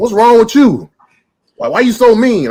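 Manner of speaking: very high, shrill shouting. Retelling a lady at a light yelling across: imitating someone yelling. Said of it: "yells across at me".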